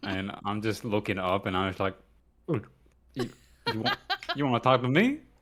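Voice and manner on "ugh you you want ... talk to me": pitched-up speech through a mouthful, mid-chew. Playing Stella, interrupted while eating, answering someone who wants to talk, talking with mouth full. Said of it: "I've got a mouthful of food".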